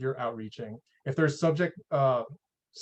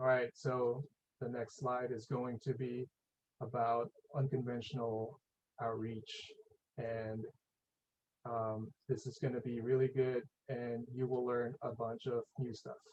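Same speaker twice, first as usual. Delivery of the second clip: very quiet, flat, lifeless presenter-style drone; 3 semitones lower, 13 dB quieter than usual. On a video call, demonstrating how not to present a slide, in a boring presentation voice. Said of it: "Just like like boring".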